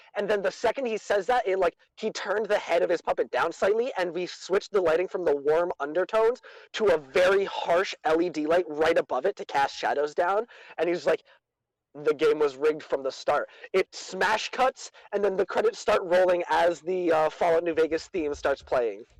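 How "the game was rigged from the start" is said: ordinary talk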